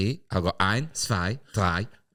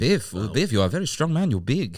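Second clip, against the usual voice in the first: affected put-on German accent; 4 semitones higher than usual. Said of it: "Harry's got an unbelievable accent for this".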